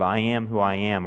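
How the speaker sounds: usual speaking voice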